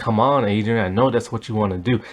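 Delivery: mock creepy low voice. Retelling a movie scene where a man taunts a woman: imitating a creepy voice. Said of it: "he's saying it in, like, this really creepy kinda way".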